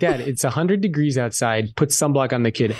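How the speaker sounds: ordinary delivery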